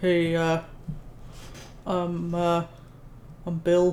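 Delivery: fake gruff voice, very slow, drawn way out. Voicing a character while playing a video game, put-on gruff voice. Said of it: "Tried tried putting on a gruff voice".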